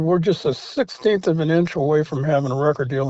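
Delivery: normal talking voice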